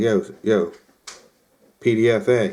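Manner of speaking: ordinary delivery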